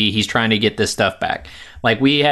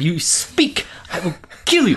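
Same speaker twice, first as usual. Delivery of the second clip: put-on yell, higher; 7 semitones higher than usual. Retelling a movie fight scene, imitating someone yelling. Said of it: "yelling at him".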